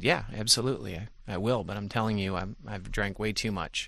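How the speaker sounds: normal talking voice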